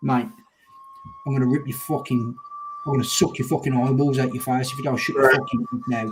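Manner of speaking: sudden, put-on, switched-on menacing, threatening tone. Retelling stepping in on a bloke: imitating own sudden menacing threat. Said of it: "transform like a light switch from calm down to".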